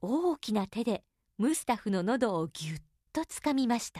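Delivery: ordinary delivery, nothing marked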